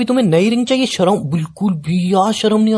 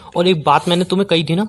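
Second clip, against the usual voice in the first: usual speaking voice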